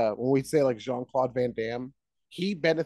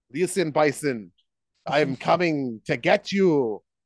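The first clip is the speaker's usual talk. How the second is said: put-on Austrian accent. Imagining a muscle actor in the role, Arnold Schwarzenegger impression. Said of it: "With that accent".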